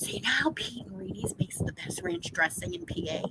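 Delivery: speaking in a whisper. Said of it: "so I'm gonna whisper it".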